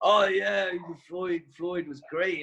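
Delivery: put-on high, mad, weirdly mangled Scottish American accent. Retelling what Jeff Butler said about a fighter, mad Scottish American accent. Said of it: "the mad Scottish American accent".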